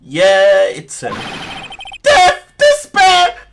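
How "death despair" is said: screaming in despair. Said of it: "is that your client screaming over there?".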